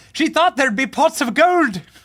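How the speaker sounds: put-on shrill, very high, booming, terrible Irish accent. Joking about a move to Ireland: terrible Irish accent. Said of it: "What a terrible Irish accent".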